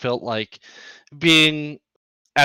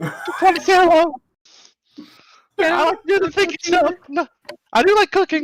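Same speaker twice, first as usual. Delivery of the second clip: put-on little girl voice, higher pitch. Voicing the host body, saying hello: sounding like a little girl. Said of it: "Why do you sound like a little girl?".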